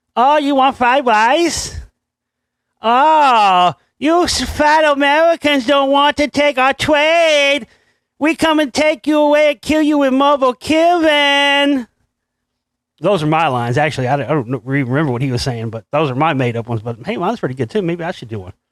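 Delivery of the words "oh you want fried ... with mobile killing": tiny, wasted-sounding cartoon dragon voice, high and slow. Acting out made-up lines for an animated dragon, in a very wasted tiny voice. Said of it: "talking in a very wasted tiny voice".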